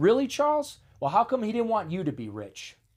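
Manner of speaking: put-on snippy, sharp, high swooping snapped delivery. The speaker retells how they snapped back at a man, retelling snapping back. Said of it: "my dumbass snapped back at him".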